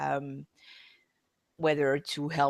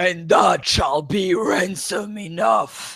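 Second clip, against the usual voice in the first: high, slow, loud booming voice. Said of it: "Okay, I'll try that".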